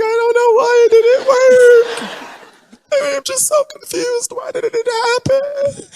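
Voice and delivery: put-on very high, tearful sobbing voice. Imitating people crying on Instagram after rushed relationships: mock crying. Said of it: "wanna be on Instagram crying".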